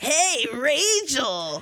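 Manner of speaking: put-on raspy voice. Doing his voice after the others praise Steve-O's voice: Steve-O voice. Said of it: "His voice where he's like this".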